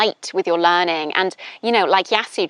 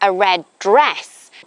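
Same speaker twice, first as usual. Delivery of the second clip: emphasis lands on the word dress. Teaching sentence emphasis with she wore a red dress, stress on dress. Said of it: "you're emphasizing that it's a dress that she's wearing".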